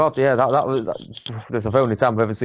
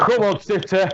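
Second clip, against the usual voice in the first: mock raised stadium-crowd shout, pitched high; 9 semitones higher than usual. Retelling shouting from the front row of the stand: imitating own past shouting. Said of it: "the only probably mank Yorkshireman in the front row there shouting".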